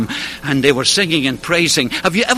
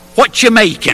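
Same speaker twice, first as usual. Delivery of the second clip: put-on tried-on English accent; 4 semitones higher than usual. Quoting an Englishman's workroom questions, speaker tries an English accent. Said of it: "so I'll try his accent".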